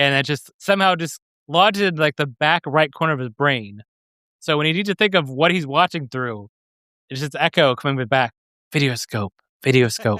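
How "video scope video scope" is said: mimicked announcer voice, lower pitch. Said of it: "That was a good one".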